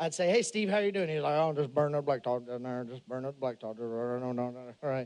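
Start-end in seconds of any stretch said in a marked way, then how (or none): 1.4-5.1 barely understandable low mumble, drawn-out no. Act out a truck driver answering your greeting, in a barely understandable Boomhauer-like voice. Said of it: "talked kind of like a little like a boomhauer".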